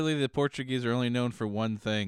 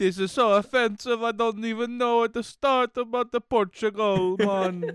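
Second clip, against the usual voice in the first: put-on Jamaican accent, very high and loud; 11 semitones higher, 7 dB louder than usual. Going on about Portugal, in a fake Jamaican accent. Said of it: "You're not even doing the right accent".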